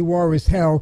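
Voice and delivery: ordinary delivery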